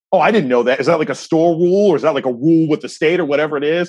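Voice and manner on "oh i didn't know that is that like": usual speaking voice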